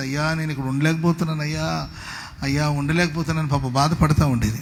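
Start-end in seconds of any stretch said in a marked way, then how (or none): none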